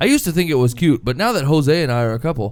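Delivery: ordinary delivery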